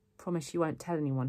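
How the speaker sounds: ordinary delivery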